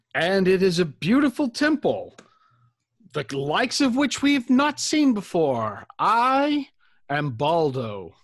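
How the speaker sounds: high, swooping, lilting, flattering tone. A player bows to the temple's voice and replies in character, as Baldo.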